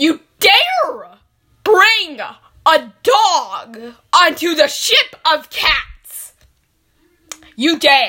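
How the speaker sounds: very loud shouting, yelling. Scolding a father in a role-play scene, yelling. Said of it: "Stop yelling at your father".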